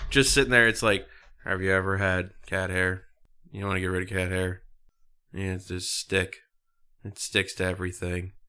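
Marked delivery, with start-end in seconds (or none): 1.4-8.3 flat deadpan monotone, zero interest. Picturing Steven Wright as a pitch person, deliver the pitch in Steven Wright monotone. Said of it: "just monotone".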